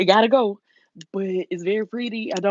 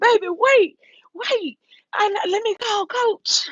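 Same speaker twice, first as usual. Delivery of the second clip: play-acted, very high-pitched, drawn-out screamed call; 14 semitones higher than usual. Retelling a moment of running after someone: imitating someone screaming. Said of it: "I'm screaming".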